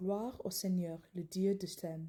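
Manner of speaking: ordinary talk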